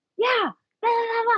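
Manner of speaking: put-on, very high-pitched, shouty yelling babble. Retelling a guy yelling in a calm room, imitating someone yelling. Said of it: "like yelling at me".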